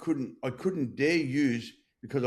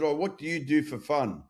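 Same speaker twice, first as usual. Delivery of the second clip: snide, rude, sarcastic tone; 2 semitones higher than usual. Retelling a rude question once put to an older lady: imitating a sarcastic question. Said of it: "in a sarcastic sort of way".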